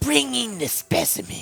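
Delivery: high, squeaky scientist voice. Describing how a game character sounds, you demonstrate his line, squeaky Hojo voice. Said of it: "Like very squeaky".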